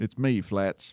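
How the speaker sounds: put-on backcountry, rural drawling country accent. Settling into the character's voice, country accent. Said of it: "There we go".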